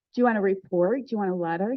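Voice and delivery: put-on teasing tone. Retelling offering to write something for someone: retelling own teasing tone. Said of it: "I said it in a teasing way".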